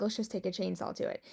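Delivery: plain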